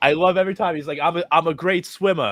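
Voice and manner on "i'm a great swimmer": thick put-on Boston accent, much higher and slower. Speaker on a podcast quotes something Jake always says, imitating Jake's thick Boston accent. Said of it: "That Boston accent. It's crazy thick".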